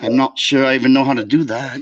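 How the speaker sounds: poorly done put-on British accent. Told everyone must talk British today, unsure how to do it, British accent. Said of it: "You just did it".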